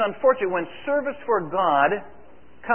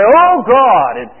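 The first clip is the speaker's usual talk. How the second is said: very loud, booming, grand, pious prayer intonation; 4 semitones higher, 14 dB louder than usual. Retelling how Ted opens in prayer at the chapel, in Ted's incredible prayer voice. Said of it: "he prays in this incredible voice".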